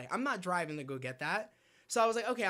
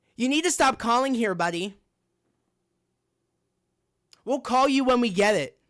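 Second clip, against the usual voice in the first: rude, curt, dismissive tone, very loud, pitched up; 5 semitones higher, 11 dB louder than usual. Retelling what a store employee said on the phone: imitating a clerk's attitude. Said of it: "She says it like this".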